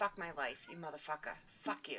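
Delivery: hushed, whispered mumble under the breath. Retelling getting mad while doing the dishes, imitating own mumbling. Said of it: "I'll mumble".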